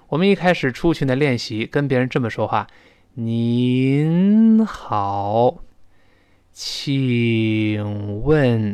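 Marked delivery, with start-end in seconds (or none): 3.1-8.7 very slow and deliberate, each syllable spaced out. Showing how they practised talking to other people, in very slow speech. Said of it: "说到这么慢的时候".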